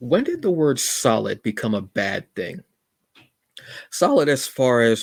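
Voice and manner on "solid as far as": loud voice breaking and cracking mid-phrase. Addressing the folks listening, voice cracking. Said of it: "my voice just cracked".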